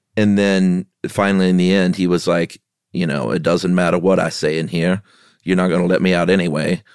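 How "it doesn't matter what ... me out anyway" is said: put-on voice sounding sedated, as if tranquilized. Quoting a film character's parole plea: Morgan Freeman impression. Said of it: "That's by Morgan Freeman".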